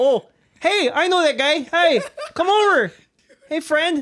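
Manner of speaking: put-on friendly, very high Canadian accent. Reacting to a co-player's bugbear, speaker voices the creature in turn: Canadian bugbear voice. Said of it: "A Canadian bugbear".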